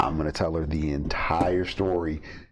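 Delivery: plain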